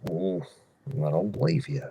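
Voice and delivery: soft, breathy, goofy cartoon dog voice. Recalling a hot tub scene from a Goofy movie, the speaker quotes him: Goofy voice. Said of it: "what is my goofy voice".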